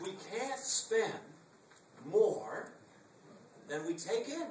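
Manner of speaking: slow, emphatic, pause-broken, spelled out. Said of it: "But I'll say it slowly".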